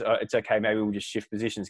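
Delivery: ordinary delivery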